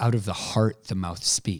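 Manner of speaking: normal talking voice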